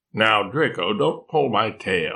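ordinary delivery

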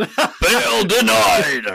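villain voice, pitched very high. Recapping the judge denying release, in the speaker's best villain voice. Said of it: "with my best villain voice".

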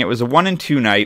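plain

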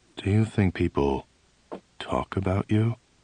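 grave, low, quiet, serious, questioning tone. Reading a story where the psychiatrist asks a sudden question: low, serious tone. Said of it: "in a low, serious tone".

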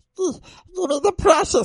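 creature-like voice, pitched very high. Imitating how the game character might sound, like the movie. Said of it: "if he sounds like that".

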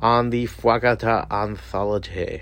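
strange, slow put-on voice.

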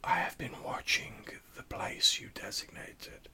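hissing, whispered ghostly voice. Voicing a spectre bound by ritual to serve, in a whispered, hissing spectre voice. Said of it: "whispered, hissing voice of the spectre".

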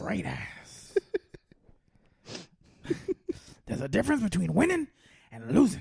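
put-on gruff voice. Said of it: "what about Al Pacino?".

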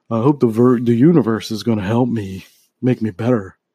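exaggerated put-on masculine dude voice. Talking about doing woo woo things, the speaker voices a very masculine dude. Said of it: "it's a very masculine dude".

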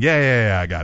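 put-on cocky dismissal. Retelling how a character brushes off someone handing papers: imitating a dismissive brush-off. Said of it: "he brushes it off".

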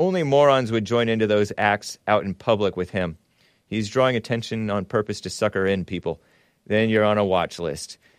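usual speaking voice

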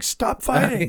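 put-on yelling. Acting out a bystander in a bar fight: imitating a guy yelling. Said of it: "it was just like".

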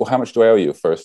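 ordinary talk

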